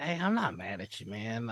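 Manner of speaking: soft, quiet half-whisper under the breath. Playing a character, half-whisper to the one in the chicken hut. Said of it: "I am going to whisper to the chicken hut".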